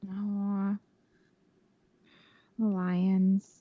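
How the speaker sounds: sad, glum tone. Answering which team you are picking for the game: sad. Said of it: "You sound sad".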